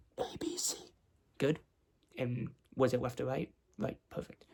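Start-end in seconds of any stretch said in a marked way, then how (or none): 0.2-0.8 soft, breathy whisper, very close to the ear. Testing hearing by saying letters into one ear: whispering. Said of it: "I'm just gonna whisper letters and numbers".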